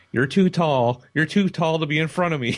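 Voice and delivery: tiny, very high, complaining little-lady voice. Retelling a moment in a concert crowd: imitating a little lady's voice. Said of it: "little lady's voice".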